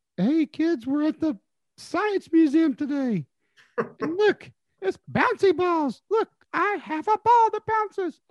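voice pitched really high. Show how he talks to kids at the places he goes, in a really high-pitched Blippi voice. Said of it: "talks with a really high-pitched voice".

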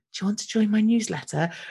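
small whispered voice. Mocking a website's newsletter signup hidden in the footer: tiny whispering voice. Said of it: "this tiny whispering voice that goes".

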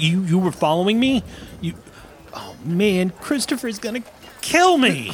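high-pitched stammer, tripping over words. Caught following someone, he can only stammer while looking at them: stammering. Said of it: "He just stammers".

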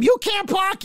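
play-acted, shrill, very high shrieking scream. Retelling an old lady in a video screaming at two guys: imitating someone screaming. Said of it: "she's screaming at them".

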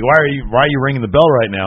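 ordinary talk, nothing marked

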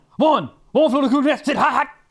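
like a quarterback calling plays. Playing a movie-title game, saying a title like a quarterback calling plays. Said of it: "a quarterback about to call the plays".

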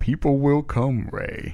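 put-on, grand, comforting movie-speech style reassuring voice. Scene putting a worried promoter named Ray at ease: James Earl Jones voice. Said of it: "your expertise of James Earl Jones as Terrence Mann".

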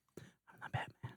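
very quiet, breathy, serious hero-style whisper. Parodying a very serious Batman scene, in a Batman whisper. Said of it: "I whisper".

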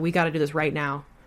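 normal talking voice

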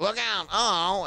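very high, cartoon-style voice. Retelling his old video show voiceovers: imitating Mel Blanc. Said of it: "I just copied him".

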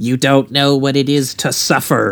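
rasping, raspy, high-pitched delivery. Discussing a creepy woman from a film, a speaker imitates her: raspy high-pitched Poltergeist voice. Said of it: "That raspy, high pitched voice that she has".

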